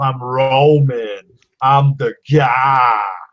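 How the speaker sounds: loud, very slow, dragged-out tough-guy voice. Mocking how a wrestler talks in the ring: imitating Roman Reigns tough-guy voice. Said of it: "to try to sound tough".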